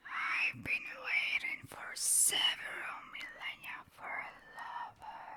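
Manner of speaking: rasping, breathy whisper. Narrator reads the waiting woman's words to the man running past, in a raspy whisper. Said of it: "the raspy voice whispered".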